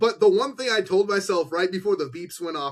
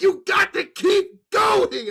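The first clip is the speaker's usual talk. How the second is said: put-on very high, stretched-out, drawn-out yelled scream; 14 semitones higher, 3 dB louder than usual. Retelling screaming a line while recording with eyes closed: imitating own screamed line. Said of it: "I was just screamed it".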